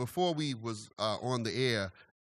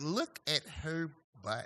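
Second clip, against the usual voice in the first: put-on Valley girl voice, higher and quieter; 4 semitones higher, 5 dB quieter than usual. Retelling what some women in a video said: imitating a Valley girl. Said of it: "California surfer, Valley girl type".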